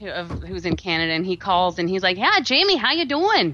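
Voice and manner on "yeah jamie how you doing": put-on Minnesotan accent. Imitating a Canadian client greeting Jamie on the phone, Minnesotan accent. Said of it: "he actually sounds like he's very Minnesotan".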